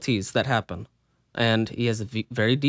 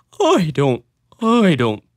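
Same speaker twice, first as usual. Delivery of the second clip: deep, slow, strong attack dying down into a yawn; 5 semitones higher, 7 dB louder than usual. Trying to imitate Patrick Warburton's voice: Patrick Warburton impression. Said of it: "That's so hard to do".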